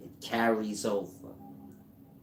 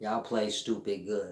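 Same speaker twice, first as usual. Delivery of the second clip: ordinary delivery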